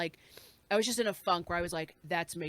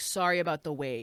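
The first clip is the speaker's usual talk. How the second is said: put-on dry, wry, teasing, tongue-in-cheek tone; 3 semitones lower, 3 dB louder than usual. Retelling what the guy who handed over the sandwich said, tongue in cheek. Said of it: "like a little like tongue in cheek".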